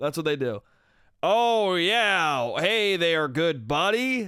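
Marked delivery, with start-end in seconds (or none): 1.2-4.3 fake 1940s American accent, higher, much slower. Mocking how Australians fake American accents, the speaker does a shitty John Wayne impression. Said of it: "They do like a shitty John Wayne".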